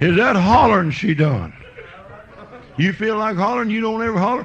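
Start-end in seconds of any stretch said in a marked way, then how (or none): 0.0-1.5 high, amazed man's voice. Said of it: "He said".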